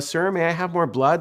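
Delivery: put-on pitiful pleading voice like a poor orphan child. Retelling how the kids asked for more blood: Oliver Twist voice. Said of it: "Like Oliver Twist".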